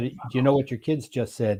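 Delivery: normal talking voice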